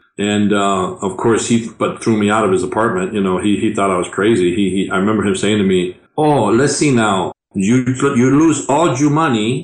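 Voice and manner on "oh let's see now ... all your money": heavy put-on Spanish accent, slower. Quoting his dad after asking him for a loan, heavy spanish accent. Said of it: "so you have a heavy Spanish accent".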